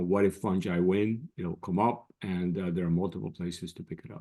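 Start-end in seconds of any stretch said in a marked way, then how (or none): none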